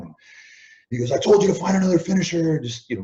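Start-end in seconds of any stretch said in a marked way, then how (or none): 1.1-2.6 mock yelling, higher pitch. Retelling how someone yelled at the speaker backstage: imitating someone yelling. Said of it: "just starts yelling at me".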